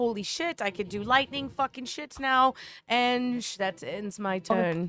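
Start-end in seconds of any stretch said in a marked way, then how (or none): 0.0-2.5 panicked exclamation, still in a panic. A tabletop player voicing their character, who is still panicked: panicked. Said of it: "and Faith is still panicked".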